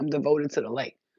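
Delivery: ordinary delivery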